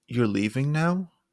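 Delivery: rising tune, sharp pitch jump on now. Statement made to sound like a question, sharp rise on now. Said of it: "A sharp rise at the end to make it sound like a question".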